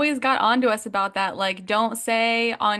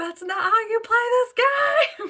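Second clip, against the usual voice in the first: screaming, pitched higher; 13 semitones higher than usual. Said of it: "I was screaming, like".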